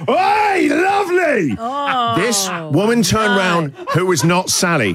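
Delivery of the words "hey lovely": put-on shrill, very high holler. From his car window, the speaker retells yelling out to a woman he took for Sally. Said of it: "I yelled out".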